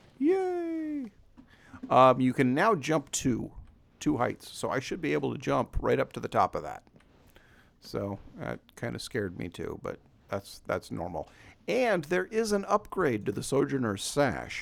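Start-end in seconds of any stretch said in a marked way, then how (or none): 0.2-1.1 very high, happy squealed cheer. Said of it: "I'm quite happy about this".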